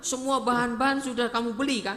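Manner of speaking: high, loud, quick, surprised questioning tone.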